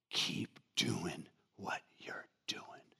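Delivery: very hushed, breathy, slow, close whisper. Retelling what an older man said, grabbing a hand: Clint Eastwood type voice. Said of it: "in kind of a Clint Eastwood type of a voice".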